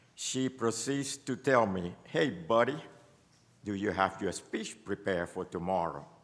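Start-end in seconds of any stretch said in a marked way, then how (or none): 2.1-6.1 put-on casual West Bank accent. Retelling what an assistant said to him: imitating a West Bank accent. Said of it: "in her own West Bank accent".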